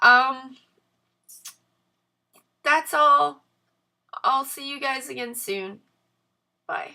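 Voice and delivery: crying while talking.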